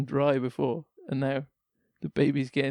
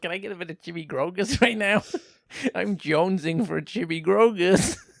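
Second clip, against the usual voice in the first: high-pitched put-on geeky nerd voice; 5 semitones higher than usual. Playing a husband asking his wife for Chibi Grogus, in a nerd voice. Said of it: "That's my nerd voice".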